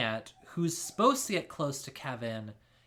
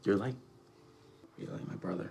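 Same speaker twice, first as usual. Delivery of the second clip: put-on whispered bro voice, lower and quieter; 8 semitones lower, 8 dB quieter than usual. Imitating a character comforting a friend: imitating Archie's bro whisper. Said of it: "Nice bro whisper".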